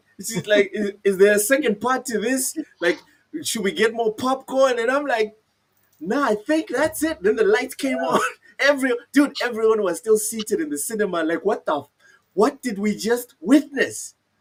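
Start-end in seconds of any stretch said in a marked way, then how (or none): 0.7-4.9 flustered, panicked, worried tone. Recalling the Infinity War credits rolling, the speaker quotes her: imitating her panicked question. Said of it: "She was panicking".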